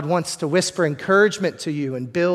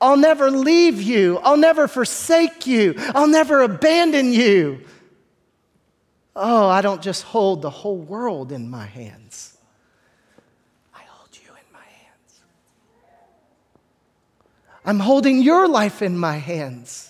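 put-on gentle whisper, higher; 5 semitones higher than usual. Voicing God speaking encouragement to the listener: whispering as God. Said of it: "He might whisper this to you".

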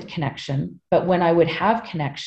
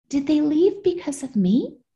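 put-on very high, little five-year-old child's voice; 9 semitones higher than usual. Retelling asking the woman where everybody went: imitating a five-year-old. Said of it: "I'm talking like a five-year-old".

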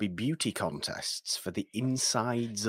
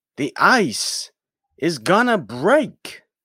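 booming, loud, high-pitched, slow, drawn-out delivery; 7 semitones higher, 10 dB louder than usual. Giving a movie quote as a little bit of an impression: Christopher Walken impression. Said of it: "It's a little bit of an impression".

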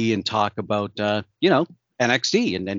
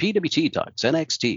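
put-on announcer voice, higher and slower; 6 semitones higher than usual. Trying out a name on a podcast, saying it in an announcer voice. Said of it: "I can have fun with it with the announcer voice".

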